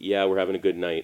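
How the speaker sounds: usual speaking voice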